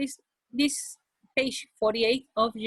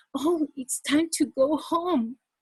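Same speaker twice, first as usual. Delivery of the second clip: anxious, concerned, worried tone; 4 semitones higher than usual. Speaker demonstrating one sentence said with different emotions: worried voice. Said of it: "manage my voice with worried voice".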